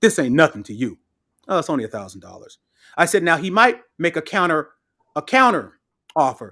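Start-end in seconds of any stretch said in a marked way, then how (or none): 1.5-2.6 very low, breezy, casual, nonchalant throwaway delivery. Coaching someone on what to say to him, acting out a nonchalant tone. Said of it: "you say it so nonchalantly".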